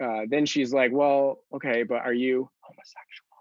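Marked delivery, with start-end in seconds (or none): 0.9-3.3 whispered speech. Retelling how the other person asked in the kitchen: imitating someone whispering. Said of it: "she whispers it in our kitchen".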